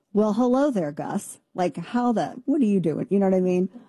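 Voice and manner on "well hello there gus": put-on flat, deflated voice, like a popped balloon. Retelling how Nana greeted a man at a door: imitating Nana's matter-of-fact deflated tone. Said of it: "Nana just said very matter-of-factly, like someone had popped her balloon".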